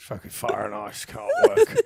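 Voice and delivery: put-on Australian bloke's accent. Joining in describing an Australian guy who lights fires, imitating the Australian guy. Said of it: "And he's like".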